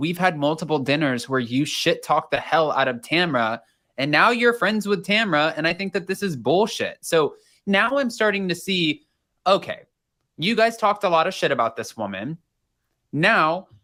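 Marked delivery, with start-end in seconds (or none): none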